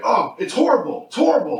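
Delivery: high, freaked-out voice, losing it completely. Retelling a husband's reaction in a story, imitating him freaking out. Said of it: "he's freaking out".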